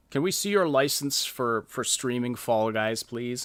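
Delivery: ordinary delivery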